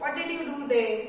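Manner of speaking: ordinary talk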